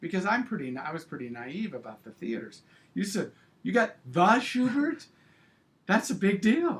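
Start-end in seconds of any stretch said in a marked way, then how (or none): 3.6-6.8 put-on thrilled, swooping outburst, very high, very loud. Retelling how the other speaker reacted to the news, imitating an excited reaction. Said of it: "when you got so excited".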